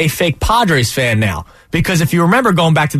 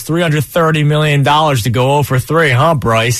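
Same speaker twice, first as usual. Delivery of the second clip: plain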